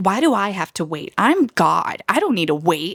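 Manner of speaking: irate, mild angry ranting outburst. Retelling a rowdy festival crowd, the speaker imitates a loud angry man. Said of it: "just getting really loud talking and really angry".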